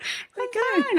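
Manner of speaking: fake high-pitched strained voice. Joking about being fine as Ross from Friends: high-pitched voice. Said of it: "I went high pitch".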